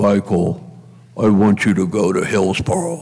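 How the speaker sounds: very low, deep-voiced priest voice. Retelling what a tall priest always told him; imitating Stan's deep voice. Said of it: "he would always say in that deep voice".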